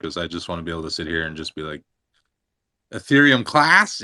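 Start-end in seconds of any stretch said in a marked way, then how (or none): 2.9-4.1 very loud, high, awkward trolling blurt. Sitting with others, doing an impression of a professional troll: imitating X-Rated. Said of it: "wanna learn how to do an impression of him".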